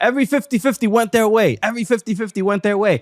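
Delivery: screaming outburst. Retelling a player screaming toward the cameras from the tunnel: imitating someone screaming. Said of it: "is screaming".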